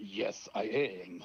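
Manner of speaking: very low, deep, fake Serbian accent. Pretending to answer a phone call from Serbia, in a fake Serbian accent. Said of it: "I cannot keep up with this fake accent".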